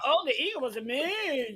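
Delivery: slow, sarcastic, shady tone. Imitating another speaker's reply about the Eagle: imitating a sarcastic tone. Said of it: "were you being sarcastic?".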